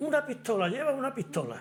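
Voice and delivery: startled, alarmed yell.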